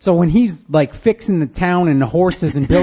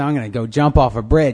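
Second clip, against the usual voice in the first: put-on sarcastic tone, lower pitched; 6 semitones lower than usual. Retelling what she said while all upset: imitating a sarcastic remark. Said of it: "She's all sarcastically".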